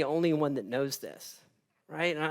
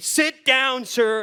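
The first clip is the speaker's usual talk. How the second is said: mock yelling, higher pitched and slower pace; 8 semitones higher, 7 dB louder than usual. Retelling how she yelled at him while he kept standing there, retelling a yell. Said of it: "she's yelling at me".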